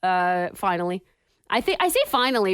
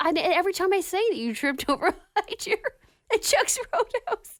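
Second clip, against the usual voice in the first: laughing while speaking, much higher pitched; 9 semitones higher than usual. Telling the person who got hurt how they retell it, laughing while speaking. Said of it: "I can't not laugh".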